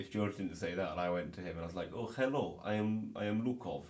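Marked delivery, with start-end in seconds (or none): 1.9-3.8 slow, drawling put-on Eastern European accent. Imagining meeting a guest while posing as Lukov: put-on Eastern European persona. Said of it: "I was Lukov or Sergey".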